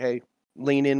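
plain

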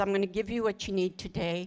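normal talking voice

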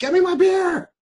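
very high, loud, demanding yell. Recalling serving customers while a show was being filmed, retelling a yell. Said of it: "there were still people yelling at me like".

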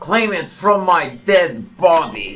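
high, snarling, snapping voice. In a tabletop fight, a narrated character answers an opponent, snarling back. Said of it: "He snarls back in response".

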